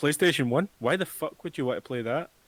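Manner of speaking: mocking, put-on corporate voice. Retelling how a games company dismisses old consoles: imitating Sony. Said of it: "Sony's like".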